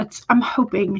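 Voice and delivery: ordinary delivery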